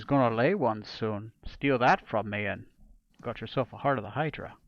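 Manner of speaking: whispering in character voice. Voicing a character who leans closer to a player: whispering in character. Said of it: "He's gonna get a little bit closer to you and whisper".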